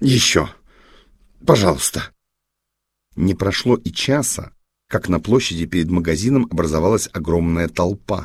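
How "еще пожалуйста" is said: pleading tone in a hoarse, raspy whisper. Captain Lesha asks Liza to dance more, in a hoarse whisper. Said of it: "хриплым шепотом попросил он".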